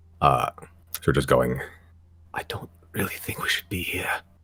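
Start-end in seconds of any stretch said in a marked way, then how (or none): 2.4-4.1 faint, hushed whisper, echoing as if from afar. Narrating, the speaker voices distant unseen figures, faint whisper. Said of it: "faint whispers".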